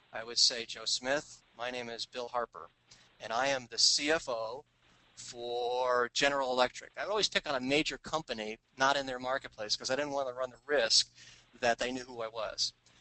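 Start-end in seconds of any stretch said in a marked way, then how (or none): 0.6-6.9 calm, slow, steady, analytic business tone. Retelling phone calls posing as a company's CFO, stable analytic accounting voice. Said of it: "in my best stable analytic voice".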